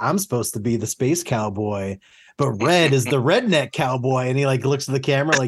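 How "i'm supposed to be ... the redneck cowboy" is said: mock pleased-with-himself, smug, self-satisfied delivery. Imitating a contestant's diary room joke: smug imitation of Cameron. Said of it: "so smugly thinks he's got the best joke".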